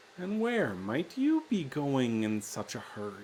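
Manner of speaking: tiny, small voice of a little creature. Game master voicing an unseen creature in the branches above the players: little voice from the branches. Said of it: "the little voice says".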